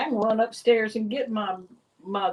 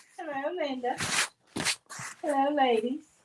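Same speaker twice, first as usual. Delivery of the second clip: put-on, pitched-up English accent; 5 semitones higher, 3 dB quieter than usual. Greeting the others as they say hi: put-on english accent. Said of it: "where that voice just came from".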